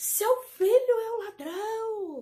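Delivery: loud, shrill, very slow shout, ladrão drawn out. Retelling how she arrived at the gate accusing the son: imitating someone shouting. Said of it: "chegou gritando no portão".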